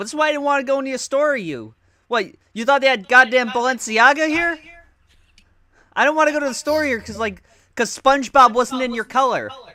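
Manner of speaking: acted, high, loud, heated screaming tirade. Retelling a man overheard with his girlfriend in a store, imitating someone screaming. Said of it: "You're just screaming this in the store".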